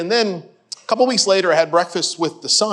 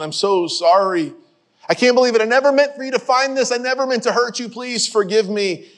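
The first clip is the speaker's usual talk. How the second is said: play-acted tearful, sobbing through every word; 4 semitones higher than usual. Retelling a father's apology to his son: imitating someone crying. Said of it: "the man dissolves into tears".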